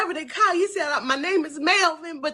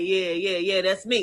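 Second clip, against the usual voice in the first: amused voice, chuckling and laughing through the words; 10 semitones lower than usual. Retelling how a man laughed while confirming who he was: imitating someone laughing. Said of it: "he started laughing like".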